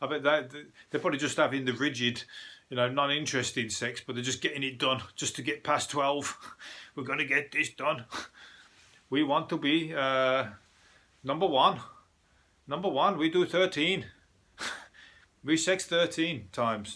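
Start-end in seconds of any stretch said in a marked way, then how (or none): 7.0-17.0 put-on German accent in English, laid on thick. Riffing on Germans, doing a German accent impression. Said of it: "that's my German impression".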